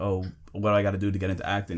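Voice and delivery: ordinary delivery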